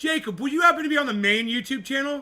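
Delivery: loud, high-pitched yell. Calling out to friends to join the main YouTube channel, yelling. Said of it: "Sorry I'm yelling".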